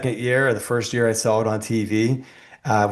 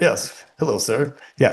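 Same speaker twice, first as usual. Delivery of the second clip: formal, polished, professional business voice; 3 semitones higher than usual. Describing getting out of the car to talk like a professional; professional voice. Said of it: "you do that professional voice".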